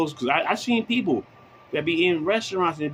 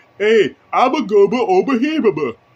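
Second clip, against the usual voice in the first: loud, high, slow mumble-mouth voice; 5 semitones higher, 9 dB louder than usual. Comparing a woman eating while talking to the Fat Albert character: mumble-mouth voice. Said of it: "the character from fucking Fat Albert".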